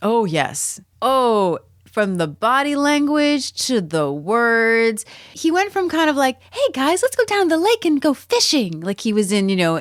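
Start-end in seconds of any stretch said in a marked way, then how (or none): 6.5-8.8 very high, classic sixties-sitcom style voice. Describing how a character first acted: imitating an Andy Griffith Show character. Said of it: "and the Andy Griffith Show".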